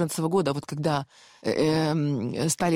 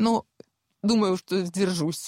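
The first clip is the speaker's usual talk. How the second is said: tearful, crying while speaking, voice heavy with tears; 3 semitones higher than usual. Speaker recounting the death of her trusted driver, crying while speaking. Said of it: "А почему ты плачешь?".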